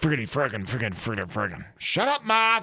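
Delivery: put-on cartoon cowboy voice. Retelling a teammate cussing under his breath while clapping, Yosemite Sam voice. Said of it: "He sounded like Yosemite Sam".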